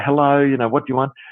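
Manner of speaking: ordinary talk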